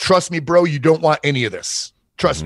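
re-enacted loud yell. Recounting a standoff, the speaker repeats the warning he gave a man, retelling a yell. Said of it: "And I'm yelling it because it's loud".

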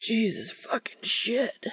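hoarse, breathy, rasping whisper. Reading an erotic story aloud, voicing a man's exclamation, rasping. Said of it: "he rasps".

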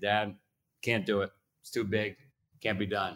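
normal talking voice

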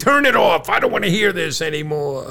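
put-on play-acted grumpy, cranky, griping old voice. Retelling how John reacts when the Mets go down: imitating John yelling at the TV. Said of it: "he starts yelling at the T V".

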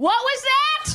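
very high, slow, drawn-out calling voice.

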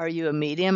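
ordinary talk

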